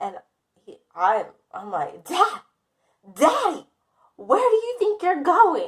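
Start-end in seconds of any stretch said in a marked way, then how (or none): 2.0-5.7 play-acted, very high, panicked, frantic, swooping pleading call. Retelling calling out to dad as he walks away: imitating own frantic call to dad. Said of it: "Can you chill out?".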